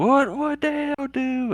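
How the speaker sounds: put-on, very high, drawn-out scream. Retelling what they finally screamed at the speaker, imitating a scream. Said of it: "They finally screamed".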